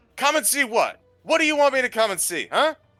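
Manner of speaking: very high-pitched, rapid, furious angry yelling. A character answers a whisper put into his mind, very angry shout. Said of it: "Salus is going to very angrily shout".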